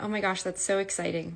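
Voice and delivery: ordinary talk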